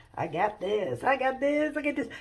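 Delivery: put-on puffed-up, full-of-himself cocky bragging. Retelling Peter stepping toward Jesus on the water: imitating Peter full of himself. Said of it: "he gets all full of himself".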